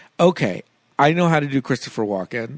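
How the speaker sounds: ordinary talk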